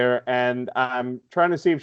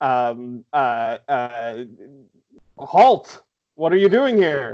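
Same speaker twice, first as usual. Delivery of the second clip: stuttered, halting speech, tripping on words. Role-playing a character drawing a weapon and challenging someone, stammering. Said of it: "with like this stammering included in character".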